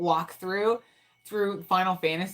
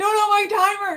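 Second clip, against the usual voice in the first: mock very high, loud, stretched-out panic; 7 dB louder than usual. Retelling answering her son during a game: imitating her own past panic. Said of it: "I'll, like, panic".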